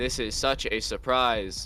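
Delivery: sarcastic, monotonous, mock surprise.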